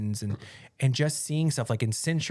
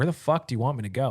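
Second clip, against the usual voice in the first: snappish, sharp retort tone. Retelling a reply to a man urging them off the plane: retelling snapping at someone. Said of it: "I actually snapped at him a little".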